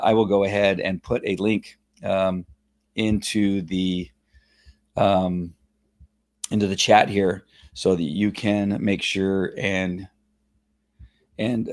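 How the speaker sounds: choked-up voice, struggling to talk. Telling viewers about the Facebook page link, still choked up. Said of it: "I'm still choked up".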